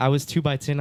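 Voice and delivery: ordinary talk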